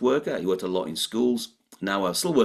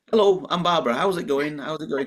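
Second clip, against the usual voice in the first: put-on cheery, friendly voice; 8 semitones higher than usual. Guest telling the host about her podcast opening, mimicking Barbara's friendly greeting. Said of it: "the friendliest opening of any podcast".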